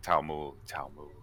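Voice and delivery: put-on mutter. Retelling how a man said his brother's name: retelling a mutter under the breath. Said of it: "whisper it, but like under his breath".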